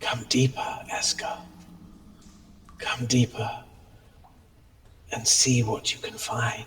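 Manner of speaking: eerie, hushed whispering voice. Narrator voicing a voice heard in a character's mind, in an eerie voice. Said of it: "that eerie voice comes back and just says".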